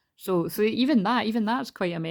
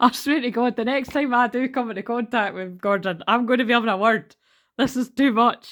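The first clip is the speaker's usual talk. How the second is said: high, loud giggling rant. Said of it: "I'm just laughing".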